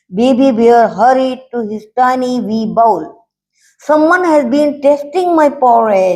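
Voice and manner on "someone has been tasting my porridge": small, high-pitched squealing voice. Reading a bear story aloud, Baby Bear finds his bowl eaten, squealing Baby Bear voice. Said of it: "he squealed".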